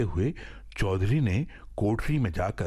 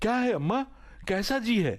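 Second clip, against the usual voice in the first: very high, stung, upset, agitated cry; 12 semitones higher than usual. Narrator reading Harnath finding his mother lying in the courtyard: agitated. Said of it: "तिलमिलाकर कहा".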